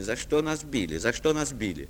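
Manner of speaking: normal talking voice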